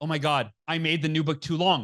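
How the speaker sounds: put-on panicked voice. Retelling a sudden flash of panic in bed at night: retelling own panicked words. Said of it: "I just have this flash of panic and I go".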